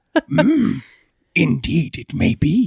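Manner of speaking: slow, drawn-out put-on voice swooping up and down. Answering whether it is a Yoda voice, in a halfway decent Yoda voice. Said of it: "Halfway decent Yoda".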